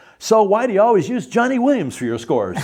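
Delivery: bitter, very high, loud hollered yell. Retelling a composer's angry question to a director: imitating someone yelling. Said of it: "Yelled at him".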